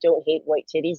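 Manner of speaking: normal talking voice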